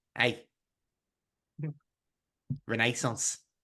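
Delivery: whispered, hushed, breathy put-on Scouse accent. Retelling what a little Scouse man said to Steve: imitating a Scouse man. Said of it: "this little Scouse man".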